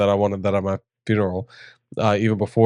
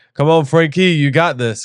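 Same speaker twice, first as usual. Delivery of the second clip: put-on pitched-up, cheering New Jersey accent; 6 semitones higher, 4 dB louder than usual. Imagining people cheering frankie on, in a jersey accent. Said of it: "imagine them in like a Jersey accent".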